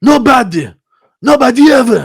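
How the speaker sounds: put-on high, loud, Polish-accented voice. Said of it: "That's how he sounds".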